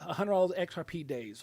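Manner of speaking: ordinary talk, nothing marked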